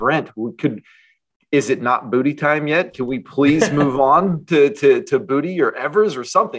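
play-acted, held-in, high, mild yelling. Retelling watching a bad quarterback game: imitating screaming at the TV. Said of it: "I'm just screaming at the T V".

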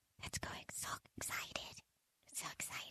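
hushed, thrilled whisper, very quiet, barely there. Announcing an event sponsor to listeners, whispering. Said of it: "I hear whispering".

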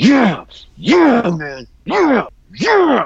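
high, loud, through gritted teeth, each "yeah" stretched. Retelling an overexcited commentator on commentary: imitating Kennedy through gritted teeth. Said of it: "gritting through his teeth".

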